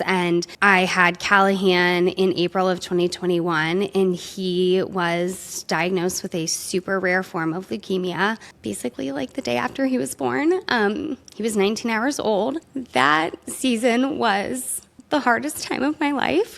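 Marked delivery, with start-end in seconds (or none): 11.3-16.6 crying, tearful, pitched-up speech. A parent recalls their newborn son's leukemia diagnosis, crying while talking. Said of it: "It's like already crying".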